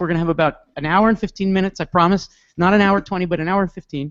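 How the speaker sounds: rattled off very fast at a very high pitch. Starting a session, promising to finish in an hour fifteen, talking really fast. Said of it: "So I'm going to talk really fast".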